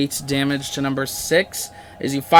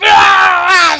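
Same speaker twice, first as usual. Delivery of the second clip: high, loud pained scream.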